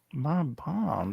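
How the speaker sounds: soft, indistinct mumbling under the breath. Imitating how a film villain spoke: imitating mumbling.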